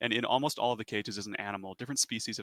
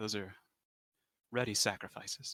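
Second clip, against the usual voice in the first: slight grin, slower; 4 dB quieter than usual. Game master voicing a woman answering a player about the other building, grinning a little. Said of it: "And she kind of grins a little".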